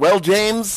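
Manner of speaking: patronizing, talking-down voice. Imitating a character who keeps calling another by his real name: imitating Locke's condescending tone. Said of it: "every time he's like".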